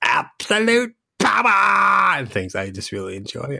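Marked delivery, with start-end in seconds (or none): 0.0-2.2 very high, creaky rasp with "power" drawn out. Asked about impressions, the speaker shows off an Emperor Palpatine voice. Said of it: "Do you ever do Emperor Palpatine impressions".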